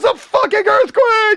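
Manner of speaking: very high, shrill, loud top-of-lungs scream. Retelling waking up to an earthquake at night: retelling screaming at top of lungs. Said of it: "I'm like".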